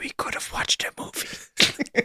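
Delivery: hushed, breathy, barely voiced whisper. Player character whispering to a stabbed man as he goes down. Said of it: "Can I whisper to him".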